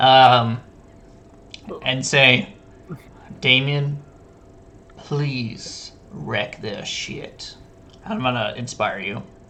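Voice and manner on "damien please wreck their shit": soft, close whispered egging-on. Voicing a character who whispers to Damien to inspire him: whisper. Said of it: "just whisper to him".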